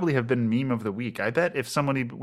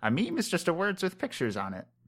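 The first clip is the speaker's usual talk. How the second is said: put-on mother voice, high and swooping; 6 semitones higher, 5 dB quieter than usual. Quoting what the speaker's mother tells a 17-year-old brother, imitating their mother's voice. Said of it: "I don't know why I use that voice for her".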